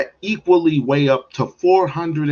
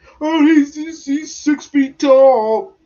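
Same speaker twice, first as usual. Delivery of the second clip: put-on very high hollering, drawn out long; 11 semitones higher, 4 dB louder than usual. Speaker contrasts a report of a teen's height with a man's claim, retelling someone yelling. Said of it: "Then he's yelling like".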